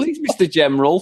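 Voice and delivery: mock pleading child voice. Repeating the kid's plea from the film scene: imitating the kid pleading. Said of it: "Is that how they talk in the Deep South?".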